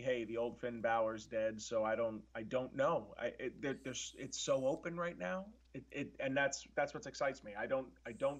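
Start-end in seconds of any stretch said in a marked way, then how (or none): none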